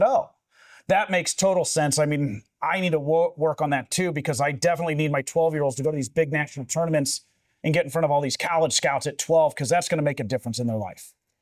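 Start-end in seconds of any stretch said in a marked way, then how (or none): none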